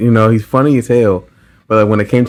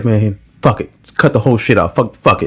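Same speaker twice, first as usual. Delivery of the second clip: mock careless, blunt, dismissive cursing. Imitating a coworker's expected reaction to a wrong fixture: imitating the foreman's blunt talk. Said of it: "I already knew he was gonna be like".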